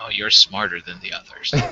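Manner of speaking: quiet hushed voice. In a game, a character quietly addresses a questioning little girl; speaking quietly. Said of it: "I'll just like real quietly like".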